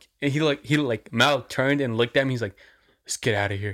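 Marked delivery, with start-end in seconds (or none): 3.0-3.7 imitated whisper. Retelling what a friend said to him: imitating a whisper. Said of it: "he just kinda whispered".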